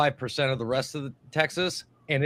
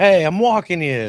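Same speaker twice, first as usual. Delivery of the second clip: put-on loud, drawn-out New York mobster accent; 5 semitones higher, 7 dB louder than usual. Discussing regional accents, the speaker imitates a mob-sounding New York accent. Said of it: "mob sounding accent".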